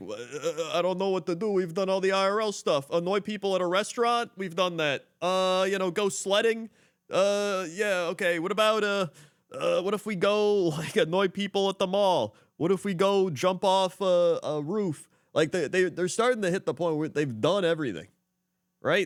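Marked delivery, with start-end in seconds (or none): 0.0-15.1 hesitant, high, slow, clueless-sounding musing. Imitating streamers who are running out of ideas: imitating streamers out of ideas. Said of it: "They're just like".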